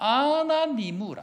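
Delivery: Gyeongsang regional speech. A speaker demonstrates Gyeongsang dialect for listeners to interpret. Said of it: "경상도 방언을 혹시 들어보셨는지 모르겠는데, 제가 지금 방언을 할 테니까".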